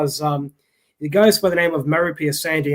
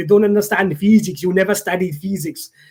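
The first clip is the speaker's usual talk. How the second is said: put-on Italian man's accent; 3 semitones higher than usual. Repeating the go-to response of an Italian man who harassed you over Messenger, put-on Italian accent. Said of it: "He's Italian, so he has that kind of accent".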